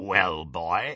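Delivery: rasping wolf-man voice. Narrator voicing the werewolf addressing a boy prisoner, Greyback rasping. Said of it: "rasped the werewolf".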